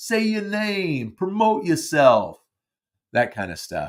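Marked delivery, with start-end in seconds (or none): 0.0-2.4 put-on heavy New York accent, raised pitch, way up high. Quoting a director's advice in his New York accent: Garry Marshall New York accent. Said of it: "he would say it in his New York accent".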